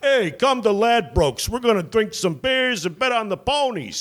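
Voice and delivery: very high, bad fake East Coast accent. Recounting a horse-track ad, calling the bros out, in a fake shitty East Coast accent. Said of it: "my fake uh, shitty East Coast accent".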